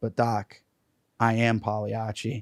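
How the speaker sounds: acted sober, earnest, weighty, all-serious delivery. Telling a joke, the speaker voices the man's reply to the doctor, mock-serious. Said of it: "and it's all serious".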